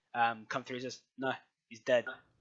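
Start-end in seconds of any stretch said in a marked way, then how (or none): 1.1-2.0 put-on male voice with a Mexican Spanish accent. Voicing a dude who comes through and speaks: mexican accent. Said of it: "dude with basically a Mexican accent".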